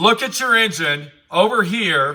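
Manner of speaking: normal talking voice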